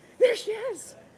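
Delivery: very loud, very high exclamation. Retelling seeing someone walk past while on the phone: retelling own loud exclamation. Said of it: "very loudly went".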